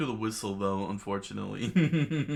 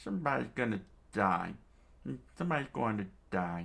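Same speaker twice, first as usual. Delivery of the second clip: put-on elderly man's way of speaking. Reading a story aloud, voicing the old man's line in an old man voice. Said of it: "old man voice".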